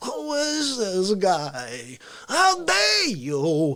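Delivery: guy dragged out very slowly with swooping pitch. Imagining Cuomo given a little coffee, the speaker acts him out: caffeinated Cuomo impression. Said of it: "if you gave him a little coffee".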